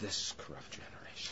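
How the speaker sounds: soft, unvoiced, hushed emphasis.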